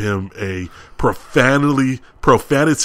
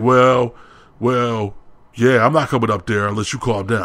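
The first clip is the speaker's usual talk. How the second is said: ordinary talk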